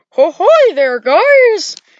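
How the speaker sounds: loud, slow, squeaky cartoon-mouse voice, "guys" stretched. Guessing how the game's characters might sound, in an imagined Freddy voice. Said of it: "that just sounds like a strange Mickey Mouse".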